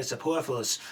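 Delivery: superfluous said in a put-on New York accent. Joking with a co-host about saying a word: New York accent. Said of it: "if you want it with a New York accent".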